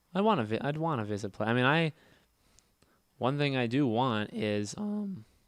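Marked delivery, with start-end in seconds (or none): 1.7-5.2 voice cracking, very slow and drawn out. Speaker talking casually when their voice cracks mid-sentence: voice cracking. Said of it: "my voice cracked. You hear that?".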